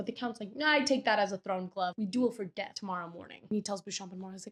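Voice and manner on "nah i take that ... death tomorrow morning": ordinary talk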